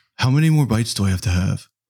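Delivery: put-on laid-back movie-star voice. Retelling what the son asked at dinner: Keanu Reeves voice. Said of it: "my son sounds like Keanu Reeves".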